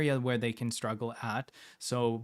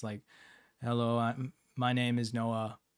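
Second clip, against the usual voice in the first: flat monotone voice. Explaining types of voice, the speaker demonstrates a flat monotone voice. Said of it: "monotone voice can sound like this".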